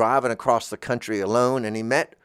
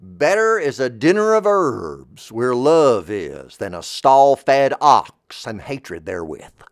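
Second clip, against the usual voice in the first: put-on loud, swooping, sing-song, laid-on Mississippi accent; 5 dB louder than usual. Speaker recalling a verse quoted on a comedy record, imitating a Mississippi accent. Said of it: "how he said it in his great Mississippi accent".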